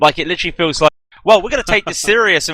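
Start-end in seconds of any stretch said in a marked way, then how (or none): 1.2-2.5 put-on American accent, slightly Western. Imitating the american team while commentating: put-on american accent. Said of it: "I apologize for putting the American voice on".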